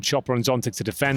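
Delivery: ordinary talk, nothing marked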